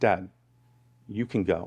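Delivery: whispered speech. A father quotes his daughter at bedtime, retelling her whisper. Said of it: "I hear her whispering".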